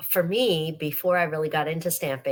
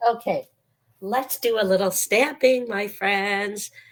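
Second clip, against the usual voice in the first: rough, croaking, hoarse voice; 4 semitones higher than usual. Speaker invites friends to start stamping, croaky voice. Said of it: "my voice is so croaky".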